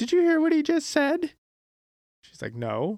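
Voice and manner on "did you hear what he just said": acted-out very high-pitched, offended, indignant outrage. Speaker acts out a girl turning to her other friend about him, mock-offended. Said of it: "she got super offended and turns to the other friend and goes".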